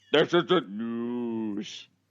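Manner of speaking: over-the-top, exaggerated deep macho announcer voice. Mocking the habit of dropping the voice to sound manly, exaggerated deep manly voice. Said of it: "sound like my balls have just dropped to my ankles".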